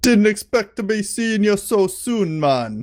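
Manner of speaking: put-on Jamaican accent. Describing a troll game character who greets players after they die, in a jamaican accent. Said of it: "He talks with a Jamaican accent".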